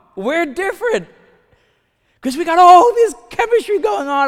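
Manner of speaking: sarcastic, shrill, loud, pitched very high. Mocking couples who rush into relationships: sarcastic. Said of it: "I know I'm being sarcastic".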